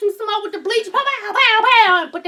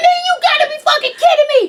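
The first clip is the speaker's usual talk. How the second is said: high, furious, disbelieving outburst; 6 semitones higher, 3 dB louder than usual. Retelling her reaction while fussing at arguing kids: imitating her own furious outburst. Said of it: "I'm mad as shit".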